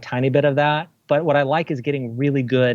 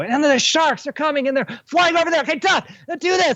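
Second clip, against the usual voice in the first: mock very high-pitched, raised shouting voice; 13 semitones higher than usual. Retelling acting out effects shots for actors: imitating a raised voice. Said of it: "I would raise my voice and go".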